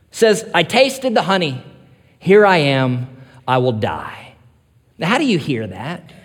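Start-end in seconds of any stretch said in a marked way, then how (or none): 0.6-4.4 put-on teenage angst, slower. Retelling the story, voicing Jonathan's reply to Saul with put-on teenage angst. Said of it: "in his bit of teenage angst".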